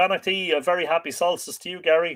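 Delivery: ordinary talk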